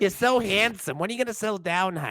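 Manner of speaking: put-on New York accent, pitched high. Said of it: "sounds like she's from New York".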